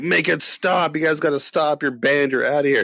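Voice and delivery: put-on high, frantic, freaking-out shouting. Retelling how the bar owner yelled at the band: imitating the owner yelling. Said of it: "yelling at us".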